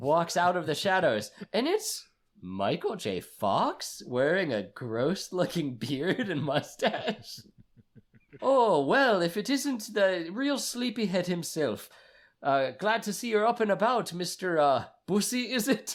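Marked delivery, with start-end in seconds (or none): 8.4-16.0 badly done put-on Irish accent, pitched up high. Acting out a movie scene as Seamus McFly, in a bad Irish accent. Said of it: "the most implausible attempt at an Irish dialect".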